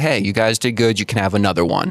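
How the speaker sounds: ordinary talk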